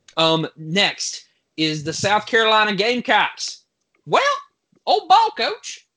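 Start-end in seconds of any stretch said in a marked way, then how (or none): 4.1-5.8 pitched way up, swooping around. Talking about the South Carolina team, doing a Steve Spurrier impression. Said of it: "Was that your Steve impersonation?".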